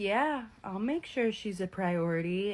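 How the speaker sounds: put-on soft, creepy male voice. Recapping a show, quoting Garrick's answer to Danielle's dad in Garrick's soft creepy voice. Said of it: "in that soft, creepy voice".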